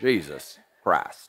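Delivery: very deep, slow, drawn-out East Tennessee accent. Showing how East Tennessee pronounces the name, slow and deep. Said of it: "Just got to get it real slow there. Just got to deep voice it there".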